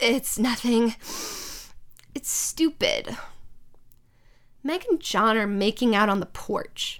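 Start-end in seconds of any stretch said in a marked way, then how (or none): 0.0-3.2 crying, slower. Asked why they are crying, a character answers while crying. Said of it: "Why are you crying?".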